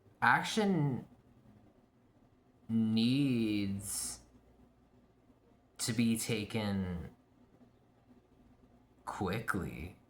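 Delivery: very slow, deliberate, drawn-out delivery. Tarot reader interprets a card spread, unsure of the reading; said really slow. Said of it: "I said that really slow".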